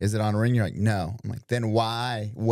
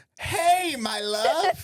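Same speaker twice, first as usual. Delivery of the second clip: very high, forced-sweet sugary tone over fury. Retelling greeting someone on a call again, mock-sweet over hidden fury. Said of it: "I'm like furious, but I'm trying to be sweet".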